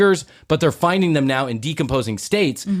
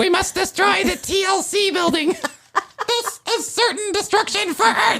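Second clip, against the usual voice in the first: very high, squeaky cartoon space-alien voice. After a listener asks 'The what?', the speaker repeats the demand in an alien voice. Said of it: "Is that your alien voice?".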